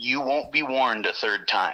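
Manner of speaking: put-on dead calm, flat, quiet voice. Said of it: "when he said that very dead".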